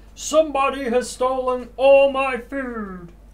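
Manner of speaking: very loud, very high booming ogre voice. Running a tabletop game, the narrator voices an angry ogre: booming ogre voice. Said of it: "That's my booming voice".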